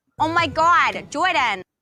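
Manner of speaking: put-on New Jersey accent. Comparing two characters' accents, the speaker does Lucy's Jersey accent. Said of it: "this is Lucy's Jersey accent".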